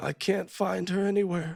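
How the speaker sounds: speaking while crying. Voicing a character who begins to cry, asking about his wife: Marcus crying. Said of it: "And he begins to cry".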